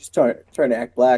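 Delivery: plain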